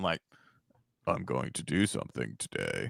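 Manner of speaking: lifeless, very low and very quiet, no personality. Speaker mimics a game character's opening lines, completely monotone. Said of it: "it's just like completely monotone".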